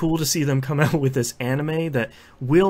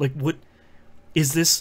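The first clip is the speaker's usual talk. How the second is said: normal talking voice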